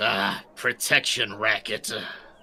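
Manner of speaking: repulsed, distasteful voice full of disgust. Narrating what Foos says during the game, disgusted. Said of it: "gets a look on of disgust on his face".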